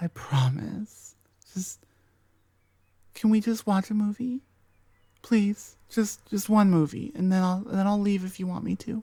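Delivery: desperate, repetitive, obsessive pleading. The listener's best friend in an ASMR roleplay, an obsessive yandere best friend. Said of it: "[F4A] Your Best Friend Goes YANDERE [ASMR][Toxic][Deceptive][Obsessive][Controlling][Friends to ???] (uploaded 2025) / I have been your best friend waiting for you to wake up and realize that I have b".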